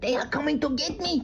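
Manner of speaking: put-on Mexican accent. A comedy video character pretending to be Mexican, in a stereotyped Mexican accent. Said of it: "This is accent".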